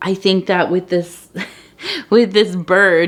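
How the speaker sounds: words broken up by laughter, laughing while talking. Talking about going through hard times, laughing while talking. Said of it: "I'm sorry I'm laughing".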